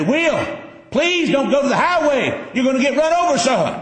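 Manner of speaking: high, pleading hollering. Acting out calling to a running grandson: acting out hollering at grandson. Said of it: "I'm just standing there hollering at him".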